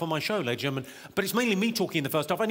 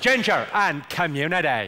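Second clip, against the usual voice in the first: Belfast accent, spoken faster; 3 semitones lower, 6 dB louder than usual. Demonstrating the phrase used to get the accent right, in a Belfast accent. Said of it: "the phrase I use to get the Belfast accent right".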